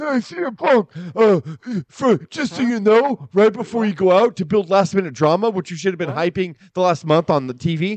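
high, polished Hollywood-style voice. Retelling what the general manager said before the match: imitating John Laurinaitis. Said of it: "his amazingly, like, Hollywood ready voice".

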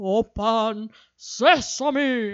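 big, intense, theatrical movie-trailer style delivery. Recalling a movie preview, the speaker quotes its big moment in a dramatic voice. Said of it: "That was a really nice voice you just did".

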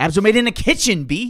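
high, loud New York skater guy voice. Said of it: "New York skater guy".

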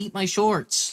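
very high-pitched cartoon voice of a ten-year-old boy. Retelling a woman answering a boy selling candy, cartoon boy voice. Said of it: "that's a really good impression".

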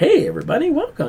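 very high-pitched, light, easygoing voice. Describing how the animated series did him: Bruce Wayne impression. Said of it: "talk in that voice".

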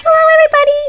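squeaky, high, pitchy voice. A podcast host greets listeners, voice squeaky today. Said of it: "my voice is really squeaky today".

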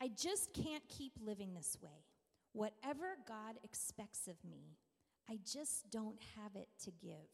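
voice strained with pain. Reading a tired, exhausted mother's words from a book, imitating a pained voice. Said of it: "Can you hear the pain in her voice?".

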